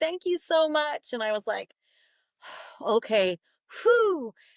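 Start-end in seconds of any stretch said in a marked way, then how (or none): 0.0-1.1 bawling, tearful, sobbing through the words. Retelling what a woman in that office said, imitating someone bawling. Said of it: "she's just like bawling".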